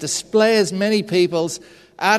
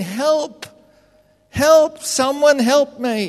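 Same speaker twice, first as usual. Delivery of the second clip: put-on high-pitched yelling, repeated over and over; 7 semitones higher than usual. Telling a story about a man hanging off a cliff face; acting out yelling for help. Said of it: "he's hanging there and he's yelling".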